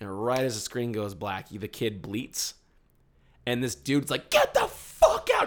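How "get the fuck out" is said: acted, very high, drawn-out, enraged scream. Retelling how a man in the theater screamed at a kid: imitating a man screaming. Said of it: "Just screamed at him to get out".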